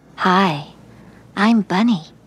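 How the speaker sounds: acted seductive animated voice. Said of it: "puts on her sexy voice".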